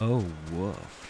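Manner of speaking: woof pitched way down and drawn out.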